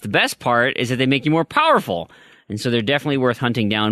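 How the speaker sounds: usual speaking voice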